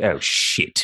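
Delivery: deflated, let-down, disappointed, dismayed tone. Acting the same character's follow-up reaction: disappointed and dismayed. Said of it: "disappointed and dismayed".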